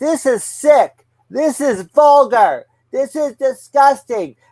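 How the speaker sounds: high-pitched, screaming man's voice, protesting tone. Recounting a man who stood up during a movie scene, retelling a man screaming. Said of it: "starts screaming".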